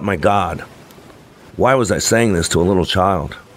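plain reading voice

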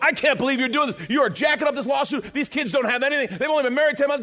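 mock unhinged, high, furious ranting outburst. Retelling a lawsuit meeting, acting out the guy to the left going insane. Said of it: "The guy to my left goes insane".

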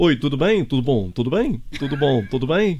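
poorly done Brazilian Portuguese accent. Showing off a self-admittedly bad brazilian accent: put-on brazilian accent. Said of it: "Então isto é o meu sotaque brasileiro".

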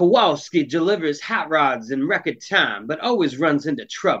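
smooth, soulful radio DJ announcer voice. Announcing a character description in a put-on DJ voice. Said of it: "That's what I call my DJ voice".

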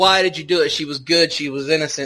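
ordinary talk

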